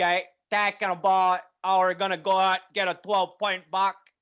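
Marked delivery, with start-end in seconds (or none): 1.6-3.9 put-on Northern Wisconsin local accent. Imitating a hunter talking about a buck hunt: imitating a Northern Wisconsin accent. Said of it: "Northern Wisconsin Voice".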